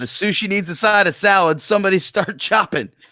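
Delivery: shrill, very high yell in a put-on character voice. Calling out in character after lassoing the Krellborn: in-character yell. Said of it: "And I yell".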